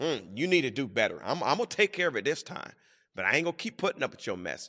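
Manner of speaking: harsh, hard, unkind voice, fast. Illustrating forgiving someone the wrong way, in a harsh tone. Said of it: "not forgive it with a harsh tone".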